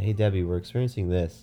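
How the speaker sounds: plain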